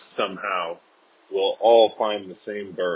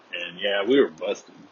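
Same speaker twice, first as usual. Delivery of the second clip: usual speaking voice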